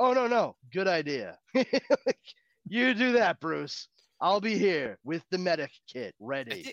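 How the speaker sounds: sarcastic British butler voice. Wishing Alfred would talk back to Bruce, doing a smartass Alfred impression. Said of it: "a British smartass".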